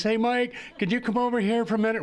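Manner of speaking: sweet little voice, high and quick. Recounting Beverly calling Mike over, imitating Beverly's sweet little voice. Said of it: "her sweet little voice".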